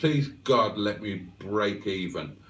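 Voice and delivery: normal talking voice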